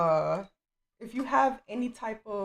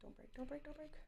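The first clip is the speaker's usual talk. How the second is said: anxious, very hushed whisper under the breath; 6 semitones higher, 23 dB quieter than usual. Speaker carefully taking something out, getting quiet from nerves. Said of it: "I'm getting quiet because I'm nervous".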